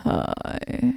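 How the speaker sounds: electronically altered, rough, creaky voice-changer voice. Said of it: "I forgot to turn off my voice changer".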